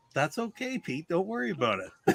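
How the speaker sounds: very quiet, hushed, gone-still delivery. Retelling how a teammate reacts to a miss, imitating someone speaking very quietly. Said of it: "get really, really quiet and go".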